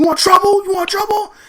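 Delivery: acted, very high, shrill, goading scream. Retelling how the driver challenged them to fight: imitating a man screaming. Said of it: "he's screaming at me like he wants to fight".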